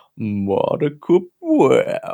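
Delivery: put-on drawling Southern accent.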